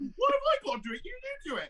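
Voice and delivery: nervous, very high-pitched voice. Retelling his reply when Mark sends him off each episode, mock-nervous high voice. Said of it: "my voice goes all high and nervous".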